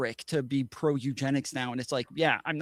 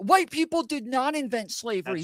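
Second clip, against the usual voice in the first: mock angry rant, higher and louder; 10 semitones higher, 5 dB louder than usual. Retelling how conservatives react to slavery being raised: imitating conservatives going off. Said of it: "immediately start going off saying".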